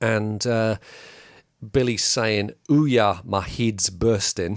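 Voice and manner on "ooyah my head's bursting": slow, clumsy, drawn-out bad Scottish accent. Describing a cartoon, reading out what Billy is saying, bad Scottish accent. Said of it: "I'm ridiculous when I try and sound Scottish".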